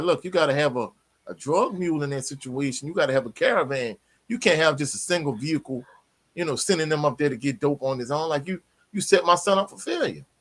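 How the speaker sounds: ordinary talk, nothing marked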